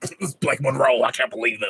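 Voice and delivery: fuming, angry, outraged ranting voice.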